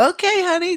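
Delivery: very high-pitched, doting, indulgent tone. Retelling how the mom answers her cursing kids: imitating a mom saying it smiling. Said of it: "smiling at them".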